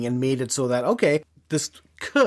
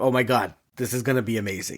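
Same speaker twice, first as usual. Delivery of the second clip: put-on excited voice, pitched lower; 3 semitones lower than usual. Retelling a myth where she meets Shiva: imitating an excited Draupadi. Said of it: "she is so excited".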